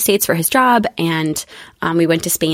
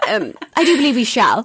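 high, mock Regency period-drama speech. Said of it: "no one speaks that way".

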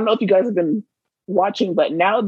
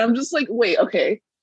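ordinary delivery

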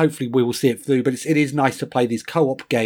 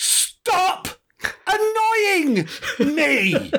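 put-on very high, shrill, sing-song, swooping child's shout. Retelling how she looked up from the jigsaw and shouted, imitating her shouting. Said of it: "she just shouted".

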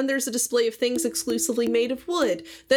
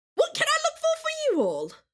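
very high, loud, swooping shriek. Narrating a game scene, the speaker voices Cratethy in a loud shrieky Cratethy voice. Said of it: "how loud and shrieky".

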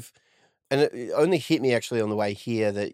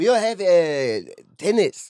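put-on French accent, much higher, louder; 6 semitones higher, 4 dB louder than usual. Joking that tetanus became tennis, in a French accent. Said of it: "Was that a French accent?".

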